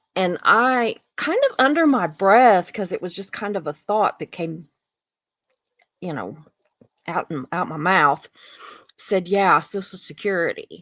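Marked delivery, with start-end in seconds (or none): 9.3-10.6 put-on snarky tone, slower. Retelling a comment about Social Security said under the breath: mock-snarky remark. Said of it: "I kinda said it kinda snarky".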